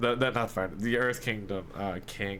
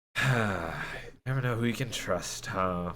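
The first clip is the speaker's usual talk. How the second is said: hushed, muttered under the breath to herself. Game master voices Benta, overheard by Rafa: muttering under her breath. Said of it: "you hear sort of Benta under her breath".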